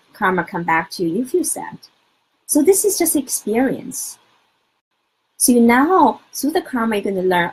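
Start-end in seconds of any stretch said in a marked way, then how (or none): none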